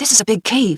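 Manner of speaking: serious whisper. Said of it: "his voice still a whisper".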